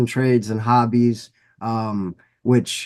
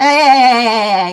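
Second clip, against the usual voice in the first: shrill, blaring, very high, loud cartoon voice; 12 semitones higher, 8 dB louder than usual. Doing impressions one after another: SpongeBob voice.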